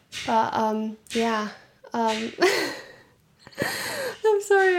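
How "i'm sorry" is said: high, slow voice with laughter. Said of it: "I'm laughing".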